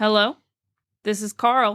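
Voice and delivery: slow, flat, droning monotone voice. A disembodied voice only the narrator hears introduces itself, Carl's slow monotone voice. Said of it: "a slow, monotone voice".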